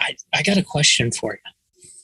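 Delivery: conspiratorial, confiding stage-whisper tone. Retelling how a customer quietly asked a question: imitating someone whispering. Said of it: "he was kind of whispering it".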